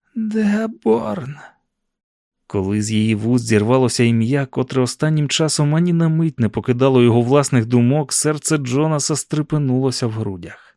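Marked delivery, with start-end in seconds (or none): 0.2-1.4 quiet, hoarse, rasping voice, pitched up. A woman finally manages to say a single word, in a quiet hoarse voice. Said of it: "тихим, хрипким голосом".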